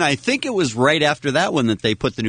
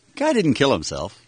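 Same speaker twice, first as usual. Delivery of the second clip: ordinary delivery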